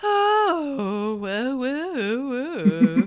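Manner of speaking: very slow, high voice, every "oh" drawn out. Imitating an actor's voice as Voldemort: imitating the actor's Voldemort voice. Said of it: "It's the voice".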